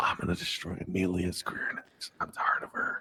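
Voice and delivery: hushed whisper. Telling another speaker a secret between the two of them: whispering. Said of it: "and I'm whispering".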